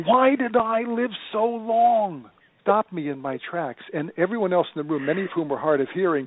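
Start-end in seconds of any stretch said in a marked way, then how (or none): 0.0-2.3 mock very slow, high, loud, long drawn-out blurt. Retelling a nursing home resident's outburst: imitating a loud outburst. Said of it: "blurted out in a very loud voice".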